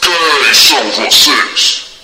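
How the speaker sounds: very deep, very low, loud storybook villain voice. A narrator reads the thumb's question in a story about fingers: villain voice. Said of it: "fazendo voz de vilão".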